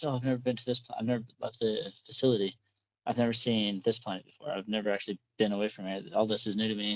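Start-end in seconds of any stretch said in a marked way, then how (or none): none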